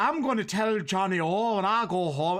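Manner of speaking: bad fake Irish, half Appalachian, half Scottish, drawn out. Retelling actors pretending to be Irish: imitating a bad fake Irish accent. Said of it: "What the fuck is that accent?".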